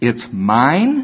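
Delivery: put-on possessive little girl's tone. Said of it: "in this tone of voice".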